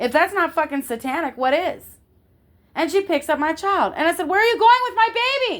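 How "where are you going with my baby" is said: put-on high, loud, carrying, hall-filling yell. Retelling how she yelled at a woman taking her baby: retelling her own loud yell. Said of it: "I yelled it loud enough for everybody to hear".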